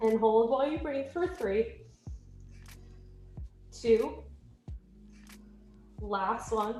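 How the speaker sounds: trembling voice. Instructor counting down a held exercise, shaking voice. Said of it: "My voice is shaking".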